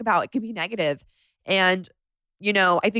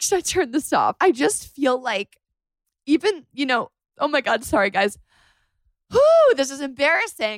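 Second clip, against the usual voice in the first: tearful, pitched-up talking through tears; 6 semitones higher than usual. Talking into the mic to her listeners, crying while talking. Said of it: "now I'm just like crying into the mic".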